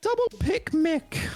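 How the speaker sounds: very high-pitched, squeaky voice. Announcing a double pick for a joke: high-pitched voice. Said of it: "Went for a high-pitched voice on that one".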